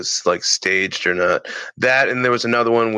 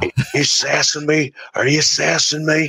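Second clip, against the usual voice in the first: pitched-up, taunting tough-guy wrestler voice; 6 semitones higher than usual. Retelling a comedy sketch impression: Stone Cold Steve Austin impression. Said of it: "he would do a spot-on impression of Stone Cold".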